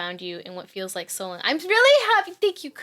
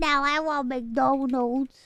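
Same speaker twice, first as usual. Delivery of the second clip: put-on Puerto Rican accent, higher pitch; 3 semitones higher than usual. Repeating another speaker's line, mimicking Ironmouse's Puerto Rican accent. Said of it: "Why did I say McDonald's like McDonald's?".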